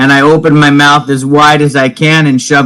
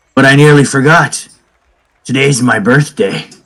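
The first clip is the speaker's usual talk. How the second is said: whispering in character. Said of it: "And I say that with a whisper".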